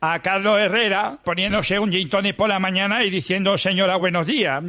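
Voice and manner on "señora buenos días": ordinary talk, nothing marked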